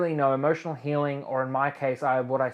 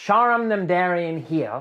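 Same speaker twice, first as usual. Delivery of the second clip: very slow, loud, each syllable carefully drawn out; 4 semitones higher, 5 dB louder than usual. A host introduces their name to viewers so auto-captions catch it, very slowly. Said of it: "I say that very slowly".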